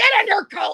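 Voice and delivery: very high, very loud, shrill and snappy. Showing the voice used while protesting: loud snappy Pearl voice. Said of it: "with my loud, Pearl, snappy voice".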